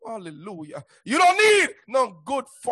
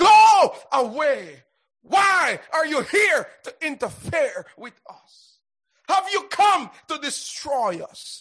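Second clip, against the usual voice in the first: loud crying-out shout. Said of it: "Spirit cried out".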